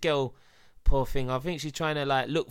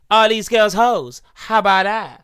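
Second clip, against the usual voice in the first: put-on teenage girl voice, higher and louder; 7 semitones higher, 11 dB louder than usual. Asking another speaker to judge an impression: imitating the Cash Me Outside girl. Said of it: "Do you think that's a good impression?".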